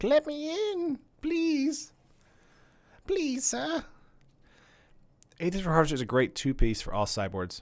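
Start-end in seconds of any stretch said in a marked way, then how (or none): 0.0-3.8 very high, very slow, drawn-out crying kitten voice. Voicing the kitten crying at the door to get in: mock pleading kitten voice. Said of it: "He's, like, crying. He's like".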